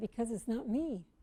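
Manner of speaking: normal talking voice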